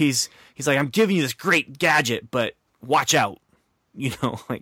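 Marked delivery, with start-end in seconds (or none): 0.8-3.4 mock edgy, faintly threatening, mildly aggressive and pushy. Describing Fitz handing over a watch, imitating Fitz mock-aggressively. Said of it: "not quite that aggressive as my voice went".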